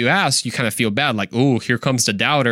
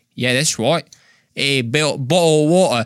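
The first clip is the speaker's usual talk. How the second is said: put-on Cockney accent; 3 semitones higher than usual. Trying out different accents for the audience, in a fake Cockney accent. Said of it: "What about some Cockney?".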